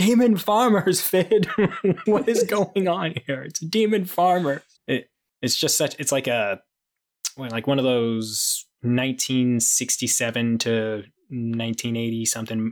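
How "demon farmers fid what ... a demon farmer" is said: mock scream, high and at full volume. Speaker recounts a group fleeing after a fight, retelling a scream. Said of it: "just screaming".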